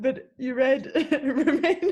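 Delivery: words broken up by laughing throughout. Pointing out another speaker's misread word: laughing while talking. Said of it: "I'm so sorry I'm laughing".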